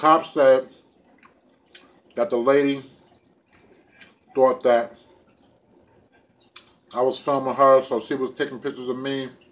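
talking with mouth full, chewing. Telling the other speaker what the cops said while eating, talking with mouth full. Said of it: "let me take another bite of this sandwich".

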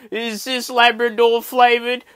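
acted-out, high, loud, tearful, freaking-out crying wail. Retelling eating dog biscuits and questioning a mate about them, retelling own crying. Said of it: "So I'm crying at this point".

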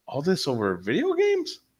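put-on laughing speech. Speaker quotes their lawyer, who laughed at them, imitating the lawyer laughing. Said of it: "my lawyer literally looked at me and started laughing".

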